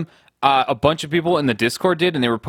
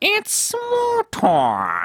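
very high, swooping cartoon-villain voice. Repeating a correction from angry commenters: Skeletor voice. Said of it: "you sound like, uh, Skeletor".

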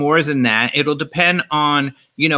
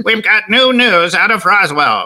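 put-on old-time radio announcer voice, higher and louder; 5 semitones higher, 4 dB louder than usual. Retelling an old radio announcement about Roswell: imitating an old radio announcer. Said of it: "Why did they all have to talk like that?".

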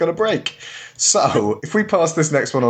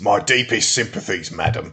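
fake London Cockney accent; 4 semitones lower than usual. Coaching a partner on a line, speaker demonstrates it in a cockney accent. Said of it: "you got to be Cockney for this one".

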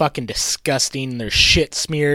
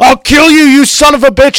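loud, belted, high-pitched outburst; 12 semitones higher, 12 dB louder than usual. Recalling a favorite movie scene: imitating Cary Elwes as Doctor Gordon. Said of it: "I like specifically when he's like".

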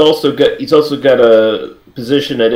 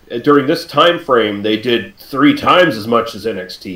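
usual speaking voice

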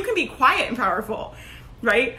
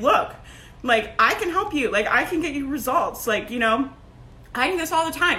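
ordinary talk

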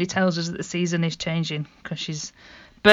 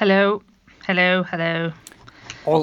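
received pronunciation accent. Greeting colleague Stella as she is introduced, received pronunciation accent. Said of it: "Don't know why I said it like that".

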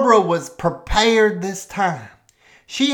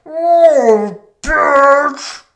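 dog-bark impression, higher and louder; 8 semitones higher, 5 dB louder than usual. Describing a dog that cusses Barbara back, imitating its bark as words. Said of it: "It sounds like".

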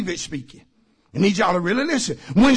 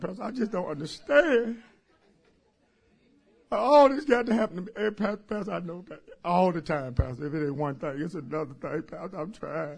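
mock crying, lower and quieter; 4 semitones lower, 10 dB quieter than usual. Acting out a distressed person talking to the pastor: imitating someone crying. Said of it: "I'm sorry for crying".

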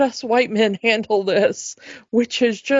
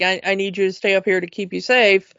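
ordinary talk

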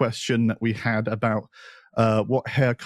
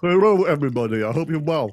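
speaking with mouth full of liquid; 4 semitones higher than usual. Co-host greets the audience at the start of the show, speaking with a mouthful of gin. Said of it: "considering that that was a mouthful of gin".

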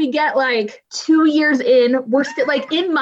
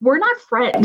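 ordinary talk

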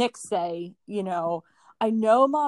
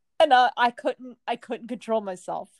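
plain

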